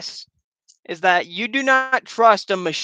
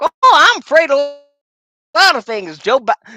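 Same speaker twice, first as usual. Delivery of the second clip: put-on old western cowboy man voice; 8 semitones higher, 6 dB louder than usual. Retelling a live stream moment, doing an old western man voice. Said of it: "I was doing this old Western man voice".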